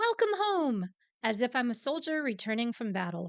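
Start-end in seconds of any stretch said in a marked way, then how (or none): 0.0-0.9 very high, shrill, eager, excited shout. Narrator reads Evelyn's line as she jumps in front of him, shouting. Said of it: "jumps in front of him and shouts".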